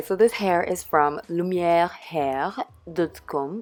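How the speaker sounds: slow, very bad put-on French accent. Talking to subscribers about a wig, in a bad French accent. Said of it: "this is my worst French accent".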